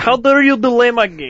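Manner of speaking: put-on loud, slow, indignant, botched Serbian-sounding accent. Retelling how an angry game developer reacted to a delay: imitating Michel Ancel's accent. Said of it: "I don't know how to do his fucking accent".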